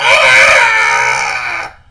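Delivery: piercing, very high, loud goblin shriek. Voicing a goblin shot dead: goblin shriek. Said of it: "he shrieks out".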